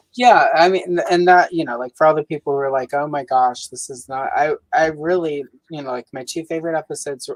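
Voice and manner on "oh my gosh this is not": ordinary talk, nothing marked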